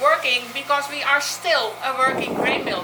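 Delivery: working stressed, main weight on it.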